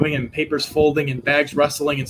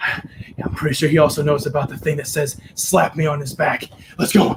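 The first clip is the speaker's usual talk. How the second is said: hushed, leaned-in, whispered halfling voice. Game master voicing a halfling leaning in to Salvatore, whispering halfling. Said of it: "he whispers, like he gets a little bit closer".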